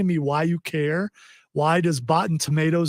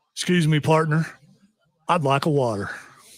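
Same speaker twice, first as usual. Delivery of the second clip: put-on country voice. Playing a customer asking for a water, in a Boot Barn voice. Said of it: "my boot barn voice".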